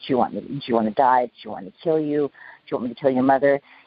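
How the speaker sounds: mock, put-on harsh whisper. Speaker quotes a threatening criminal's questions to his victims, imitating a harsh whisper. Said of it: "he spoke to you in a very harsh whisper".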